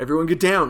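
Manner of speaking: angry barked voice. Showing how another actor might deliver a line: imitating an angry line read. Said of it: "like, angry".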